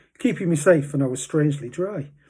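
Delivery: ordinary delivery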